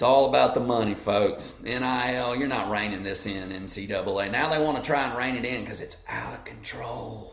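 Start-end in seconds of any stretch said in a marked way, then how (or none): 4.3-7.3 hushed, soft politician voice. Commenting on NIL money and the NCAA, slip into your Joe Biden voice. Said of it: "That's my Joe Biden voice".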